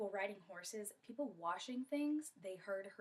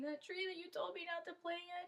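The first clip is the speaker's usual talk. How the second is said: put-on crying, high and tearful speech; 9 semitones higher than usual. Telling a story, voicing a girl explaining to her father: acted crying while talking. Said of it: "she starts crying and explaining".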